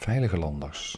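slow, soft, stress on VEILIGE in veilige landers.

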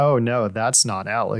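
mock sarcastic tone. Retelling what the other speaker just said: imitating a sarcastic remark. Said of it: "You said it, like, sarcastically".

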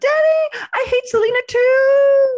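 put-on very high, very slow, loud fan shriek. Retelling screaming at a tour bus as a fan: imitating own past scream.

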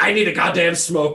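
worn-out, fed-up, frustrated outburst. Retelling taking a smoke break mid-episode: imitating own frustrated self. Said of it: "I just get f-, fucking frustrated. I'm like".

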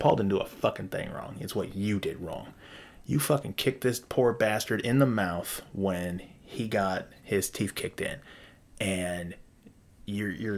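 ordinary delivery

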